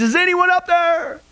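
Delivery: very high, frightened, terrified cry, pitched upward. Telling a joke, a falling tourist calls toward heaven: terrified calling out. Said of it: "filled with terror, and he called out towards heaven".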